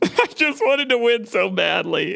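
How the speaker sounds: mock sobbing lament. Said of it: "why are you crying right now?".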